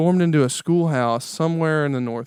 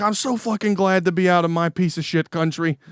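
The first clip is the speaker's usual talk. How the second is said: ranting comedian style voice; 3 semitones higher than usual. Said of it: "he was like".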